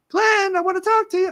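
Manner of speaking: squeaky voice pitched way up high. Joking that God's voice would never be Mickey Mouse voice. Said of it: "God's voice is never going to be Mickey Mouse".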